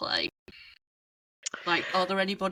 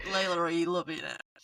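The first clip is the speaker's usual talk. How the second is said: usual speaking voice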